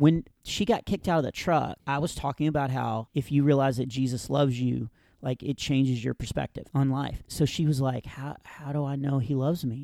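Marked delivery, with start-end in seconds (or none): 8.1-9.8 mock faint, soft whisper. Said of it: "she can't talk above a whisper".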